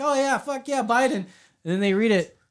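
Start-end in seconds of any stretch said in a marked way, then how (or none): 0.0-1.1 eager, excited cheering of approval, pitched up. Imitating people who think the shirt supports Biden: imitating people cheering. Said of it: "go like".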